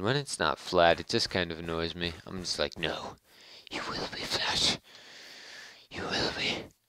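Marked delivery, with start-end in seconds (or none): 2.8-6.6 breathy, muttered whisper in a hero voice. Talking to uneven ground while mining, in a Batman voice. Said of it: "I was kind of doing my Batman voice".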